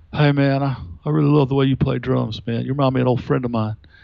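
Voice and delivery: put-on old hippie blended with Kentucky colonel accent. Recalling a man who came backstage after a show, in an old hippie Kentucky-colonel accent. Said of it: "a cross between an old hippie and a Kentucky colonel".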